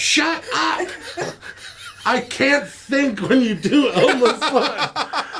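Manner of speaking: yelling with laughter. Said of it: "so she yelled out".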